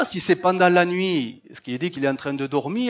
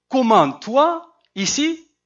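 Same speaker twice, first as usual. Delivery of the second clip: surprised, astonished exclamation with questioning tone; 7 semitones higher, 5 dB louder than usual. Showing the intonation for meeting someone unexpectedly, a surprised questioning exclamation. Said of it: "j'essaie de donner l'intonation, hein, c'est pas évident, je suis pas un acteur. Mais c'est une question".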